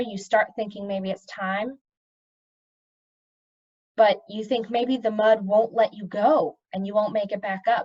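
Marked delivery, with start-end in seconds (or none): none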